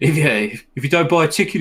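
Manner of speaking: slight mock Brummie accent. Sharing a favorite FIFA commentary line, the speaker quotes the commentator in a little Brummie accent. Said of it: "in his little broomy accent".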